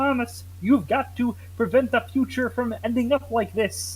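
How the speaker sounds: cartoon frog puppet voice. Recalling how they voiced one of them in the time travel story: Kermit the Frog voice. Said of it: "I voiced one of them like Kermit".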